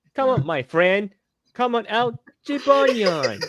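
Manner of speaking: very high-pitched cartoon character voice. Redoing a voice that once startled a friend, as Nate from Yo-kai Watch. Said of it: "Nate's voice from Yokai Watch".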